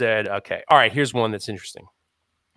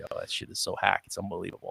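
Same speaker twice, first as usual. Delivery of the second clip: soft, muttered, whispered scoffing tone. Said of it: "under their breath they're being like".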